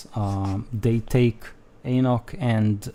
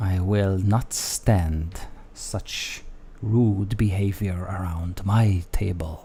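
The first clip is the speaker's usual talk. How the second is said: put-on vampire lord voice; 3 semitones lower than usual. Voicing Strahd scolding a player at his table: voicing Strahd. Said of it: "He looks at you and says".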